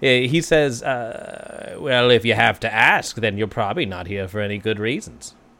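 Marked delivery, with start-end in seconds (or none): 0.8-5.3 goblin character voice. Game master voicing the goblin behind the bar, answering a player, in a goblin barman voice. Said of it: "You see what looks to be a goblin individual. He has the sort of maroon beret, the raspberry beret of the [name], and he is behind the bar".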